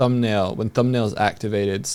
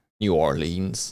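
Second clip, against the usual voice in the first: put-on old man voice like a speech synthesizer; 5 semitones lower, 3 dB quieter than usual. Retelling a surreal VR clip where the avatar answers: Marcus old man text-to-speech voice. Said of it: "the old man, like, text-to-speech voice?".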